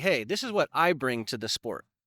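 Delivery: ordinary talk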